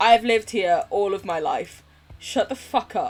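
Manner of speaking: ordinary talk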